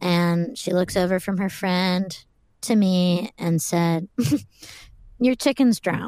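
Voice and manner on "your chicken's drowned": said through a light, half-laughed chuckle. Retelling what a girl said to him, imitating someone chuckling. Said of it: "kind of like laughing, like chuckling a little bit".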